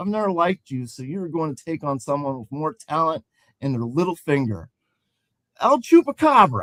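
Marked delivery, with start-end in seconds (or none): 5.6-6.6 put-on high, loud shouted call-out yell. Retelling what someone yelled about a matchup, retelling a yell. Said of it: "He yelled".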